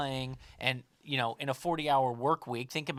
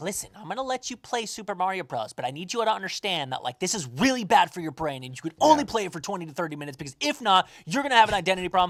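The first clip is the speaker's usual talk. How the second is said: over-earnest, raised, preachy, odd parent lecturing voice; 5 semitones higher, 5 dB louder than usual. Acting out a parent lecturing a child about video games: imitating a weirdo parent. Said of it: "we also don't wanna be that weirdo parent".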